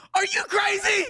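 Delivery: shrill, loud yell pitched way up. Retelling how Haywood answered when asked about getting the vaccine: imitating Haywood yelling. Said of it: "he just yells at me".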